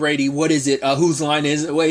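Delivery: ordinary talk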